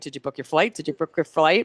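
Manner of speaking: mock obnoxious nagging, repetitive. Recounting asking someone about booking a flight, mock obnoxious nagging. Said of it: "I didn't get obnoxious going".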